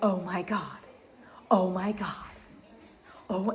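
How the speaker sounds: put-on giddy, soft, excited, said over and over. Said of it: "he just kept repeating it".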